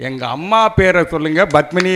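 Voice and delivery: ordinary talk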